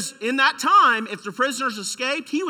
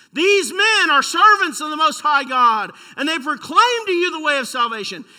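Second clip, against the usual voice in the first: mock, loud, demon-possessed screaming outcry; 4 semitones higher, 5 dB louder than usual. Telling about evangelism, acting out a demon-possessed person behind you, imitating demon-possessed screaming. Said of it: "demon-possessed screaming".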